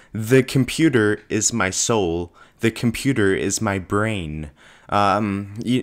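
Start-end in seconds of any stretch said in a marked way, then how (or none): none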